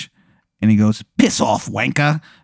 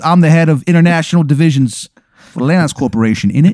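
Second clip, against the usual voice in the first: bad, unconvincing, put-on English accent, pitched higher; 5 semitones higher, 3 dB louder than usual. Retelling how a man introduced himself, bad fake English accent. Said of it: "his accent isn't convincing at all".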